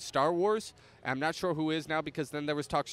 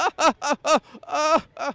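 high, loud hysterical cackling. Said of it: "hysterically laughing out loud".

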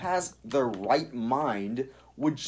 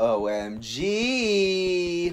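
mock obnoxious taunting voice, higher; 4 semitones higher, 3 dB louder than usual. Imitating how others taunt him: mock obnoxious taunting voice. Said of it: "they say it in the most obnoxious voice possible".

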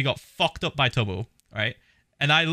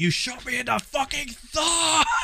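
put-on very high, climbing, furious top-of-lungs shout; 12 semitones higher than usual. Recounting getting shot in the thumb, retelling a shout. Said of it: "I literally shouted at one point".

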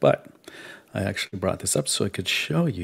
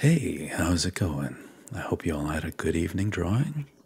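smooth, mellifluous radio announcer voice. Getting up close to the mic to greet listeners in a radio voice. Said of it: "my radio voice".

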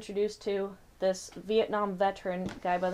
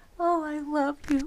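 higher put-on voice with shifting moods; 8 semitones higher, 4 dB louder than usual. Acting out her mother's sudden mood swings: acting out her mother's mood swings. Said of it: "I'm trying to act out".

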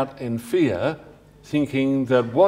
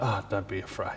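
dismissive, very hushed, offhand tone; 6 semitones lower, 12 dB quieter than usual. Showing the way Jesus does not say a line, in a dismissive tone. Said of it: "He's not saying it in a dismissive way".

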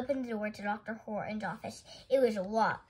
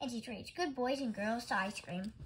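usual speaking voice

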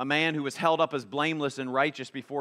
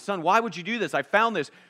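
high-pitched angry man yelling; 6 semitones higher than usual. Retelling an old PSA and voicing a father confronting his son, imitating a yelling father. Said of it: "he's yelling at his son".

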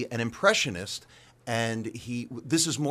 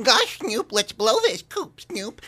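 squeaky, very high, loud cartoon-character voice; 11 semitones higher, 7 dB louder than usual. Speaker runs through the cartoon voices they mastered, in cartoon character voice. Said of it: "I mastered, I think, every cartoon voice".

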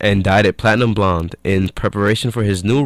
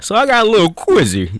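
very high, squeaky put-on voice; 12 semitones higher than usual. Opening a pop culture quiz: Breslin voice. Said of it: "that's my Breslin voice".

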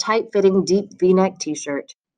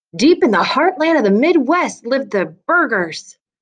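game show host voice, pitched up; 5 semitones higher than usual. Narrator reading Jake starting a filmed introduction of his family, game show host voice. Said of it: "Jake began in a game show host-type voice".

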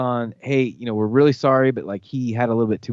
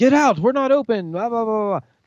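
loud, high-pitched yelling; 11 semitones higher than usual. Retelling the old man in charge of the bar yelling at them, retelling a yell. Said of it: "he starts yelling at us like".

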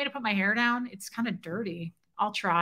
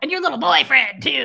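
loud, rough, creaky storybook witch voice; 4 semitones higher, 7 dB louder than usual. Retelling a woman's earlier remark to the speaker: witch voice. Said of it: "It was the same thing as the".

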